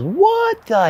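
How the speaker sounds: startled voice shooting way up very high. Retelling how the company commander reacted to a chit: imitating a voice going way up in pitch. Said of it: "His pitch goes way up".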